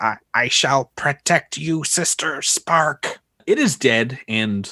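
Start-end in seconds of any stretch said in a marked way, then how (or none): 0.0-3.2 tiny, weak little creature voice trailing away. Narrating to the players, the speaker voices a dying creature addressing Sister Spark: little fading creature voice. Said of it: "it's this thing's little voice, and you hear as as it's like slowly fading away".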